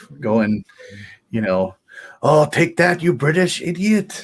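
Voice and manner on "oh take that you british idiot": jokey, high, put-on French accent. Retelling the trash talk he did in accents while playing a game, in a French accent. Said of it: "doing the British and French uh, accents".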